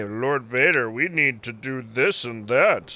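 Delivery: pushy, presumptuous, bossy little voice. Retelling how the Inquisitor tells Lord Vader what to do: imitating the Inquisitor. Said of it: "His little pet Inquisitor guy?".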